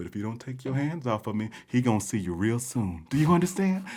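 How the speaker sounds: put-on sweet, polite Southern tone. Recounting a reply to a woman, in the nicest southern tone. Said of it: "in my nicest southern tone".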